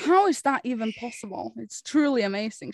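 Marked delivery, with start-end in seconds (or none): none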